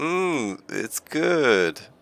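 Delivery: high-pitched voice, forced out through clenched teeth. Describing her chewing the seeds, acting out her reply through gritted teeth. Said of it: "through like gritted teeth".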